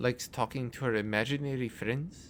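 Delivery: ordinary delivery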